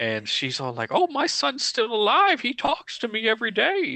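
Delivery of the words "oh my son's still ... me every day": put-on very high, croaky old lady voice. Retelling a scene where a man visits a mother, in a croaky old lady voice. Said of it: "she's like a croaky old lady".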